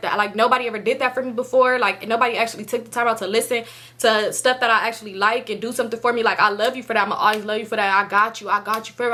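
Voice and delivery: normal talking voice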